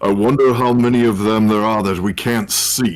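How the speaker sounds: wry, half-sarcastic, partly earnest musing tone. Voicing a character who asks aloud to no one: sarcastic yet serious tone. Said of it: "a little bit of a sarcastic tone to it, but also a little serious tone".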